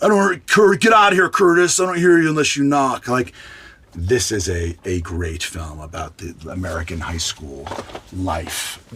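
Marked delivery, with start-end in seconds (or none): 0.0-3.1 high, loud stern teacher voice, barked. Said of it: "and Mister Hand".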